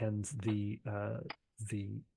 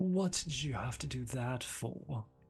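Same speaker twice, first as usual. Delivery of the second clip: crestfallen and deflated, all the air gone; 3 semitones higher than usual. Retelling how Guillaume put his martini glass down and answered: mimicking Guillaume's deflated reply. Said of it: "he's totally deflated".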